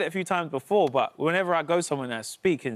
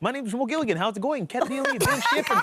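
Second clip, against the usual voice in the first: English bent into put-on Dutch accent, pitched up; 8 semitones higher than usual. Asked to do it again, the speaker repeats the line in a dutch accent. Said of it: "that's my Dutch".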